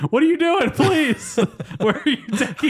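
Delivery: acted frantic, shrill cries, pitched way up. Recapping a scene where a man thinks he's being abducted, retelling panicked yelling. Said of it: "the guy the whole time is just yelling like".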